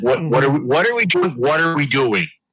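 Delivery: put-on exasperated, frustrated tone. Retelling own words on a call about reorganizing: imitating own exasperated tone. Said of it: "but I had kind of that tone".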